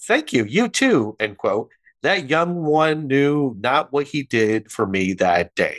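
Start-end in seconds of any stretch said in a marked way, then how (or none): 0.0-1.2 very light, high voice, pitched way up. Retelling replying to the young man at the register, in lightest voice. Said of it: "In my lightest voice".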